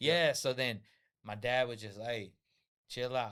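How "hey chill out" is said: ordinary talk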